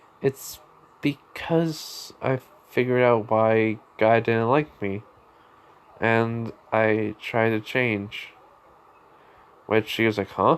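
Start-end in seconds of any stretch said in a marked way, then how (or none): 0.2-8.3 slow, sad, sorrowful, downcast voice. Retelling a story, speaker quotes a woman's reply to a man, retelling in a sad voice. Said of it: "she just says in a sad voice".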